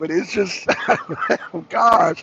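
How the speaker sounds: speaking through laughter. Reacting after acting out a plea, laughing while talking. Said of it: "I'm sorry, I don't mean to laugh".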